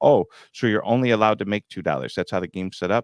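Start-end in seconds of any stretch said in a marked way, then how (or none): none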